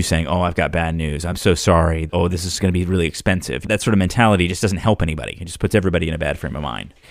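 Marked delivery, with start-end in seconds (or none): 0.3-3.7 negative, gloomy, downbeat tone. Showing the wrong way to start talking to a customer: negative, gloomy tone. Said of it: "with you being negative".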